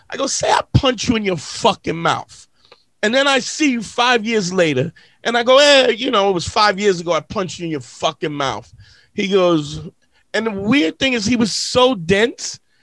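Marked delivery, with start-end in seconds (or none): none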